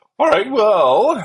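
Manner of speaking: voice cracking. Wrapping up a chat before moving to the news: voice cracking. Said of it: "as my voice cracks".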